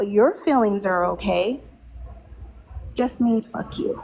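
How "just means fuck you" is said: plain hushed whisper, under the breath. Speaking while children are present, whispering. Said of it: "I'm whispering because there's children".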